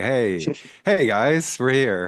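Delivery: very slow, drawn-out, every word stretched out. Imitating Opie greeting the few viewers of his Facebook live: imitating Opie. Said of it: "He'd be like".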